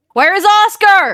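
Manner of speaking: very loud, very high, held-back shout. Voicing a character who shouts for Oscar: shouting, held back in volume. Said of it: "she'll shout and just".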